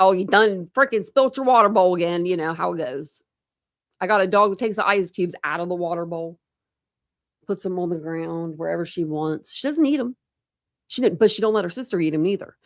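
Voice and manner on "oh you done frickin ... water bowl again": put-on yelling, louder. Showing how they yell at their animals at home: imitating own yelling. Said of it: "I'm yelling at regular animals. I'm like".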